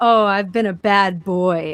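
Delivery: creepy, unsettling, slow drawl. Retelling what a man in a back seat kept saying: imitating a creepy voice. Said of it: "said it creepy too".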